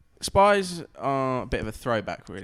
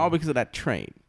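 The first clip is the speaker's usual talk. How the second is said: ordinary talk, nothing marked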